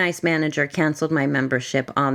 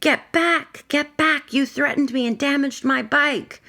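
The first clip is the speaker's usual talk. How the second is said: play-acted very high, shrill, freaked-out yelling; 11 semitones higher than usual. Retelling how another person reacted while being approached: imitating someone yelling. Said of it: "he just started yelling".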